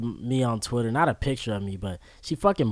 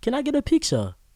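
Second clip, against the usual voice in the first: put-on London accent, higher pitch; 13 semitones higher than usual. Retelling a late-night meeting with a fan: imitating a London accent. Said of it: "my London accent".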